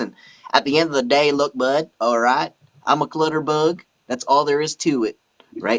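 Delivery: put-on American southern accent. Showing the voices and accents they do, southern accent. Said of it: "same with like your southern accent kind of thing".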